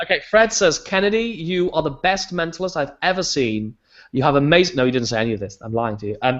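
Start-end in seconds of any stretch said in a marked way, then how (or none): none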